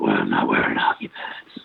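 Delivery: halfway put-on superhero tough-guy voice, rough rasp. Imitating how Jim Gordon talks in Gotham: Jim Gordon doing Batman voice. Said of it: "Jim Gordon's kind of in the middle".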